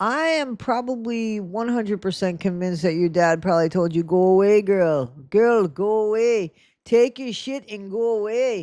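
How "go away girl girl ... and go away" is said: slow, bad put-on, half South African accent. Speaker imagines what the listener's dad told her, in a bad put-on accent. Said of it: "I probably don't do that accent very good".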